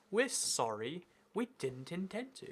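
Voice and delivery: put-on soft, slow, polished, posh English accent. Mimicking an oil company's apology spokesman, imitating a really english speaker. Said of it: "a really English speaking guy to be like".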